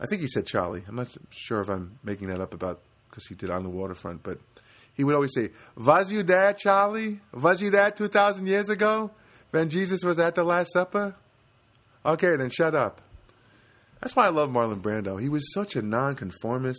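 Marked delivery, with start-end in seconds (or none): 5.8-13.0 put-on Yiddish accent, pitched up. Retelling what a man would always say, in a Yiddish accent. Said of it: "would say in a Yiddish accent".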